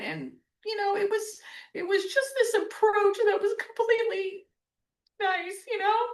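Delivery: crying while speaking, tearful. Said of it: "I cannot believe I'm crying".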